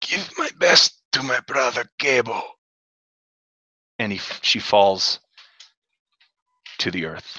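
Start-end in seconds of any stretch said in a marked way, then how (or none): 0.0-2.4 dying last-breath voice, higher pitch. Voicing a fallen warrior's final words: speaking with her last breath. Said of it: "In her last breath".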